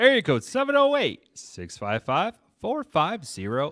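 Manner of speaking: customer-service phone voice. Giving listeners the voicemail number, in a customer service voice. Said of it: "I really like your customer service voice".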